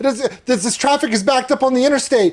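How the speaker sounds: very high-pitched, excited, hyped-up yelling.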